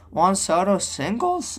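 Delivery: high voice breaking mid-sentence. Recapping a baseball game for viewers, reading out a play, voice cracking. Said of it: "that was the worst voice crack of all time".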